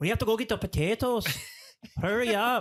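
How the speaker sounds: put-on very high-pitched, terrible Irish accent. Mocking the accents in a movie they are discussing: bad Irish accent. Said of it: "I have just now a better Irish accent".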